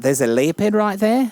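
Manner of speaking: Kiwi-style New Zealand accent. Taking turns doing accents with friends, new zealand accent. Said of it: "I do do New Zealander".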